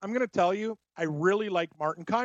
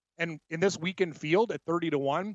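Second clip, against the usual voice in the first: usual speaking voice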